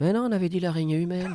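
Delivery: small, high little voice. Quoting a favourite film scene where someone answers behind: small voice. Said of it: "t'entends sa petite voix derrière qui fait".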